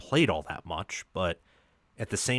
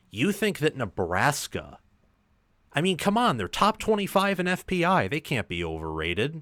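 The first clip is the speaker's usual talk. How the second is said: heavy sarcasm, high and swooping; 6 semitones higher than usual. Asking a guest whether a ranked team is overrated: heavy sarcasm. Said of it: "with heavy sarcasm there".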